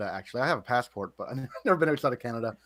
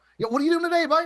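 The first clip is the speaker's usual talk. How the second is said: thick, strong Newfoundland accent, very high pitch; 4 dB louder than usual. Showing the distinct accent from Newfoundland: strong Newfoundland accent. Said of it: "in Newfoundland, we have a really distinct accent... let me see if I can do it".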